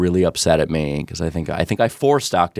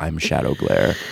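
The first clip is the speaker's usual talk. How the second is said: put-on very serious voice, pitched lower; 5 semitones lower than usual. Retelling a stranger's reply to an introduction: imitating Shadow Glare, very serious. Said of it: "very seriously is, says".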